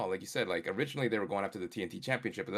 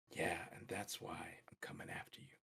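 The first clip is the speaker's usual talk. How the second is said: hushed, barely audible whisper; 5 semitones lower, 15 dB quieter than usual. Showing how he should have come in instead of going over the top, real soft whisper. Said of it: "real soft, whispering like".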